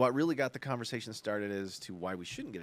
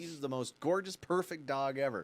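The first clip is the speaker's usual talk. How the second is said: usual speaking voice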